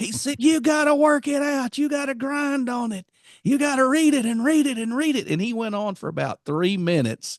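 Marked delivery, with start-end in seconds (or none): 0.4-5.3 mock shrill shouting at full force, very high. Retelling what a man yelled in his face: imitating someone shouting. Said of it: "loud as he could speak".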